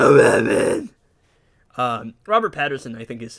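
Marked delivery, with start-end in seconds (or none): 0.0-0.9 loud belted-out movie-style delivery.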